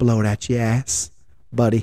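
muttered under breath. Retelling a run-in with a truck driver, retelling a mutter under breath. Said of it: "under my breath".

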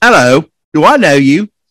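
put-on poor British accent. Joking about being recognized by strangers on the street: horrible British accent. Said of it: "most horrible British accent I can do".

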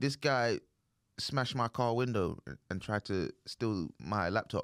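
normal talking voice

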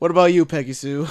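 uncaring, heavy drawl. Imitating the waiter from the movie, bored drawling voice. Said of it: "Just in the most drawl".

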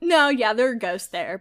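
ordinary talk, nothing marked

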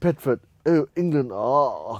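loud, drawn-out, mocking delivery. Retelling a comedian making fun of a crowd member: imitating Russell Peters mocking. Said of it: "he starts making fun of her".

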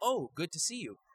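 high, caught-off-guard, surprised voice. Retelling greeting a casting director at an audition: imitating acting surprised. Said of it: "surprised, like".

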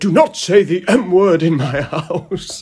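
audiobook narrator's reading voice. Retelling how the audiobook narrator Stephen Fry read the line: imitating Stephen Fry reading. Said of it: "Stephen Fry going".

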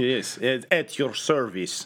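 put-on thick Russian accent. Recounting a show's scene, voicing Ravage with a thick Russian accent. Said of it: "KGB assassin voice".

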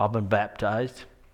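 lazy, slow, drawn-out Southern drawl. Retelling what a man said when invited to church, the speaker uses a slow southern drawl. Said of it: "He's got this slow southern drawl".

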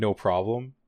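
put-on sassy voice. Retelling how a character answered a request: imitating a sassy reply. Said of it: "a sassy, like".

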